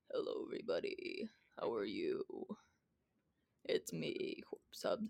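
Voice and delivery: put-on deep, raspy voice. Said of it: "let me try to do a corpse voice".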